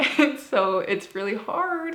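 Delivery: talking through laughter. Explaining that religious practice becomes therapy exposure, laughing while talking. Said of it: "I'm laughing, but it's not funny".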